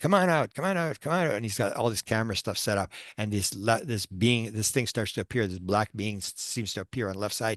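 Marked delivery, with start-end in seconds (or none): 0.0-1.3 put-on, high, repeated, hard yell. Retelling how a ghost hunter yelled at a crypt, imitating someone yelling. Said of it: "he's yelling at the crypt".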